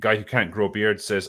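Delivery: normal talking voice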